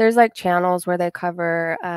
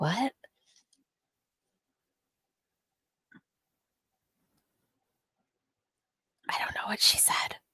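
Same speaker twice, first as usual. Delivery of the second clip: breathy, barely voiced, near-silent whisper; 3 semitones higher, 10 dB quieter than usual. Streamer unsure what a player said, whispering. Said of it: "And I'm not sure why I'm whispering".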